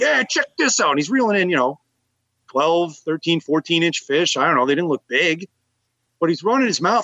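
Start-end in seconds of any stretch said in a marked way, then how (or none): 0.0-0.9 brash, belligerent heckling shout, high. Retelling a belligerent man on the shore shouting at the speaker's group, acting out his yelling. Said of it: "He's yelling stuff at us like".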